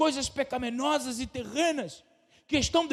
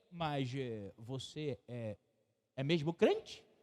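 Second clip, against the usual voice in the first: very slow, disbelieving, doubtful intonation; 11 semitones lower, 11 dB quieter than usual. Acting out someone else's question, in a mock-doubtful intonation. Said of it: "Percebeu a diferença da entonação? Isso quer dizer, eu não estou acreditando".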